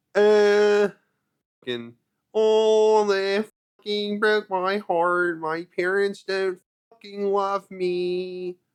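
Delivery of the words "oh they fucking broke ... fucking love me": very slow, high emo inflection, "me" stretched. Discussing how different emo music scenes sounded: imitating second-wave emo inflection. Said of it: "that second wave shit where everybody's like".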